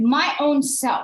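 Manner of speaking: put-on two-year-old voice, loud and high. Retelling what the two-year-old exclaims at shoe time: imitating a toddler's exclamation. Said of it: "This is exclaimed by our two-year-old".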